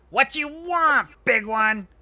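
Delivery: very high, very loud goblin screech. Narrating a paused game as a goblin walks up to the players, goblin voice. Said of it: "One of the goblins starts to walk up and goes".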